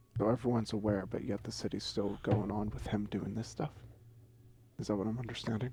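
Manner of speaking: speaking in a whisper. Asking another character in the room whether the city lets this continue: whispering. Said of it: "I was, like, whispering to you".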